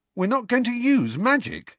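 loud high-pitched outburst. In a read story, a student protests to the teacher in class, exclaimed loudly. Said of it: "Ron exclaimed loudly".

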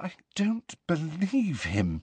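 high, quiet, very unsteady, badly wavering, shaken voice. Narrator reads Hermione's line once out of Hagrid's earshot: very unsteady voice. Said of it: "said Hermione in a very unsteady voice".

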